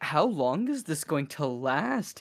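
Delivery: soft, slow, breathy, sultry delivery. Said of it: "Alina's even like".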